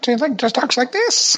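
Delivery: very high, put-on old crone voice.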